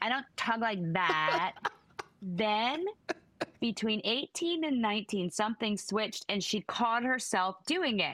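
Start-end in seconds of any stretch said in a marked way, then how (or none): 0.0-1.5 each word ends with an added extra syllable. Quoting her objecting to his imitation of her: extra syllable on every word. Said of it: "imitate her voice with the extra syllable on the end of every word".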